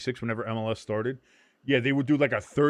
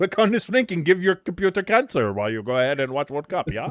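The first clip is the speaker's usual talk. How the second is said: terrible put-on Indian accent sliding into German; 3 semitones higher, 3 dB louder than usual. Speaker imagines bots here during the World Cup; bad Indian-to-German accent. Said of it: "I don't know why I went from Indian accent to German accent".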